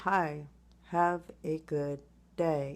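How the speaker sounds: loud, flat, emotionless, dead-level monotone. Joking that everyone must now talk without emotion, the speaker gives a greeting, monotone. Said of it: "I guess we should all talk mon- monotone now".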